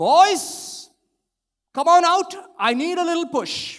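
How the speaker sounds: booming, very high-pitched call. Retelling a father calling the kids outside each morning, booming voice. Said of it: "the booming voice of my father go".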